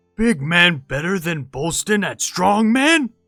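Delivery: put-on stage whisper. Voicing Bolston as he crouches down to Melina: Bolston's very-not-whisper. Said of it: "in like a very not whisper says".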